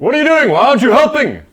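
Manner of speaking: very loud, very high, thundering, booming bellow. Narrating a game scene at a fire, voicing a newly arrived figure, booming voice. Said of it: "you hear a booming voice".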